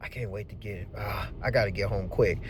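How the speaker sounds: low, soft, weary muttering.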